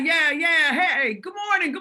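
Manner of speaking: put-on Italian accent. Retelling Mr. Hunter greeting the speaker on the driveway, in an Italian accent. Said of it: "in the Italian accent".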